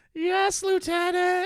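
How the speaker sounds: put-on very high, loud twelve-year-old kid voice. A soldier answers the lieutenant's order, in a twelve-year-old kid voice. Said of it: "the soldiers are not twelve".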